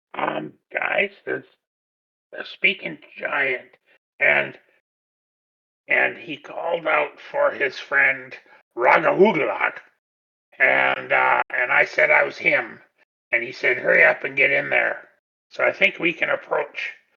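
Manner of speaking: whispering in a character voice. Voicing Splug telling friends about a giant: whispering in character. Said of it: "Splug's gonna whisper".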